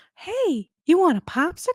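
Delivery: put-on very high, sleazy, creepy old-man voice. Friends imitate the old man from Family Guy: Family Guy old man voice. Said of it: "the old perverted man in Family Guy".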